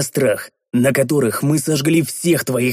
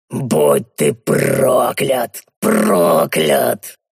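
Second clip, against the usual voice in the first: hateful, breathed-out words, much lower pitch; 2 semitones lower than usual. A captured goblin, released from a choke hold, curses his captor, exhaled with hatred. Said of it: "С ненавистью выдохнул Шурт".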